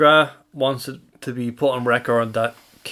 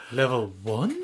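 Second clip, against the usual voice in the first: worried-sounding, concerned recorded announcer voice; 7 dB quieter than usual. Imitating the b&b elevator's floor announcer: mock-concerned announcement. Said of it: "the woman announcing the floors sound concerned".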